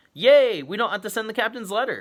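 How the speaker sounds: very high, loud, thrilled and excited voice. Narrator reads a character's line in a story, as an excited exclamation. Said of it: "Annie exclaimed".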